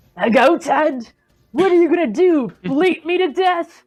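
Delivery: loud, high-pitched yelled battle cry. Voicing Girrardo as he challenges the Chimera in Draconic: yelling a challenge. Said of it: "yells a challenge at the Chimera".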